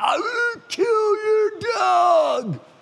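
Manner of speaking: very high booming holler, dog drawn out. Recounting a man yelling at the neighbor kid across the street: retelling a booming yell. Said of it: "yell at him just in a booming voice".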